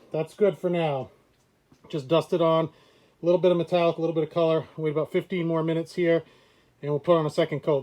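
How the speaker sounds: muffled through a mask. Someone waiting to add a second coat of paint, talking through a respirator. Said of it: "Sorry for the talking through the respirator".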